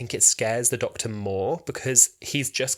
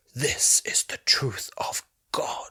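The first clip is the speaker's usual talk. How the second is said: breathy, almost whispered delivery. Recounting a scene, quoting the Dalek Emperor's line, almost whispered Dalek Emperor. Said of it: "it's like almost yes, whispered".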